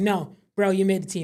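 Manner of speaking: ordinary delivery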